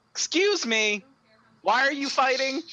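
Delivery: magically amplified, booming, very high voice. A game player's character uses thaumaturgy to call out to the fighters, significantly louder voice. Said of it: "make my voice significantly louder".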